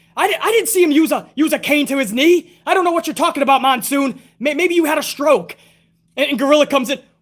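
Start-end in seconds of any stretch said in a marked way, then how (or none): 0.4-5.6 brazen, smug, outrageous tone of feigned innocence. Recreating a commentary exchange with Gorilla Monsoon, the speaker does a Bobby Heenan impression. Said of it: "Bobby Heenan would say something absolutely outrageous".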